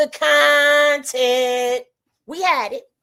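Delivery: very slow, deliberate, stretched-out put-on voice. Repeating the point about running the content, in Deuce's voice. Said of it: "let me say it in Deuce's voice".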